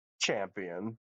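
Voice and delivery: dripping with sarcasm, a very sarcastic jab. Voicing a character greeting a rogue, very sarcastic. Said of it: "As he very sarcastically just says".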